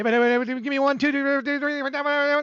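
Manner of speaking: fast put-on auctioneer talk. Joking about how fast some people can talk: imitating fast auctioneer talk. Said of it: "It's like an auctioneer".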